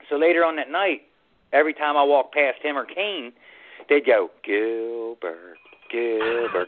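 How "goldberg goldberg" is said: mock muttering under breath, much quieter and lower. Retelling how two men taunted him to mess with him, said under their breath. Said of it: "like under their breath".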